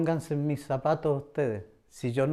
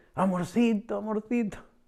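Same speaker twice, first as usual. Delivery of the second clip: put-on crying out, high, desperate, tearful, sobbing; 6 semitones higher than usual. Retelling how a pregnant woman knelt on the bed and spoke to them, imitating desperate crying. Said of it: "llorando, desesperada, me dice".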